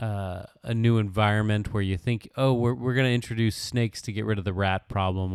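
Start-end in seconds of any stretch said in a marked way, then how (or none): none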